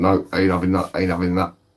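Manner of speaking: normal talking voice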